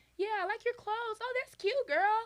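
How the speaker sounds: put-on very high, very loud, gushing little-girl voice. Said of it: "she talks like this".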